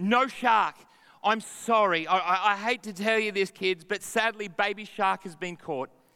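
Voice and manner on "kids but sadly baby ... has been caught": ordinary talk, nothing marked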